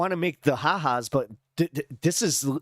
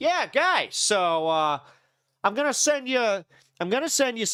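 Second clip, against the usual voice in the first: put-on pitched-up, leaned-into Chicago accent; 6 semitones higher than usual. Imitating a man in his favorite chair with whiskey: chicago accent. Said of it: "I don't know why it sounds Chicagoan".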